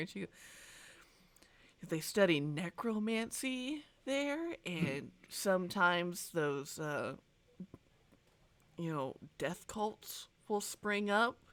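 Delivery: quiet, softly spoken murmur under the breath. Playing a woman who scoots close to the counter, in a lowered, hushed voice. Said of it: "she kind of lowers her voice".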